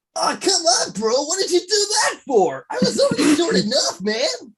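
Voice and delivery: cartoon character voice, pitched way up. A player voices their character who was just made shorter, in a high-pitched cartoon voice. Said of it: "when the voice gets all high pitched".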